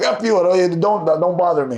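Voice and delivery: ordinary talk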